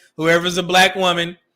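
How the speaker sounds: normal talking voice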